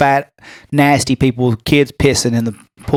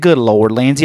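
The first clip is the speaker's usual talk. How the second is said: ordinary talk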